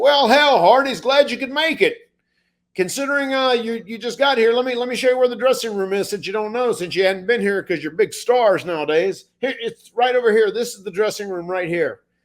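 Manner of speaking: high, mocking, dripping with sarcasm. Retelling how Bradshaw greeted the late arrivals: imitating Bradshaw being sarcastic. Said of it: "he's being super sarcastic".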